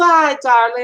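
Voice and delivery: super fancy, doll-like lady voice. Talking about someone, the speaker imitates a movie character: Devil Wears Prada fancy lady. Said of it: "I'm super fancy dog".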